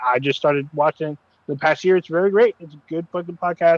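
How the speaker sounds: ordinary delivery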